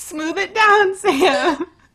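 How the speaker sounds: high, laughing hard through tears, cracking up.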